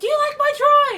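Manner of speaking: very high, very loud, shrieking scream. Retelling a haunted house visit, imitating a girl screaming at visitors. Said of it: "she screams at us".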